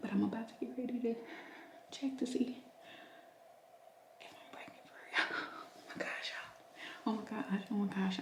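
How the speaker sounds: soft, hushed whisper under the breath. Getting ready to take a pregnancy test while someone is upstairs: whispering. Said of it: "So I'm whispering because Taylor is upstairs".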